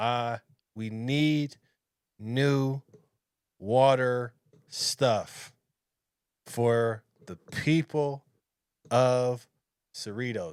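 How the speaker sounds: very slow, halting, stumbling for words. Mocking how politicians like the mayor of cerritos talk: imitating halting, struggling speech. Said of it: "he's like he's trying to get the".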